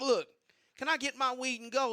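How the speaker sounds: nervous, pleading voice. Retelling a nervous request to leave: imitating own nervous voice. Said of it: "So I was getting real nervous".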